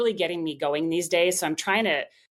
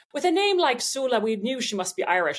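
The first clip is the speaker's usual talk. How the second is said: horrible put-on Irish accent, high pitched; 6 semitones higher than usual. Quoting a newspaper piece about her name in a horrible Irish accent. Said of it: "It's horrible Irish accent".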